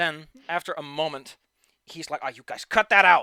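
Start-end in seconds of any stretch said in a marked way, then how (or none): 2.2-3.2 very loud, thunderous, booming giant voice. Acting out a shouting voice from a story, deep, loud, thunderous voice. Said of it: "a very deep and loud, thunderous voice".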